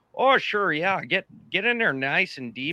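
Minnesotan way of talking. Speaker imagining someone from Minnesota saying the line: Minnesota accent. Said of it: "seeing anybody from Minnesota going".

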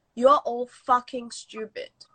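ordinary talk, nothing marked

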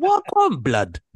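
snide passive-aggressive tone. Acting out a hypothetical remark about giving blood in a passive-aggressive tone. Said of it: "that blood would have that intonation of being a bit passive aggressive".

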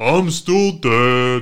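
booming character voice, dead drawn out. Doing a callback line as a dead character: Coach Martinez voice. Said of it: "we still regularly do Coach Martinez voice".

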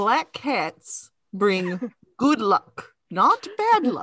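put-on really heavy, thick Russian accent, sing-song. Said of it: "really thick Russian accent going".

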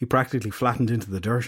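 plain reading voice

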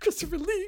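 very high, overexcited, starstruck gushing shout. Retelling puppeteers reacting to hearing an actor's name: imitating excited puppeteers. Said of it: "They're practically wetting themselves".

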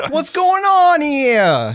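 put-on high, loud, belted New York accent, stretched. Voicing the character Bocce in a scene, with a New York accent. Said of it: "Bocce's a New York accent".

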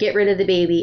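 normal talking voice

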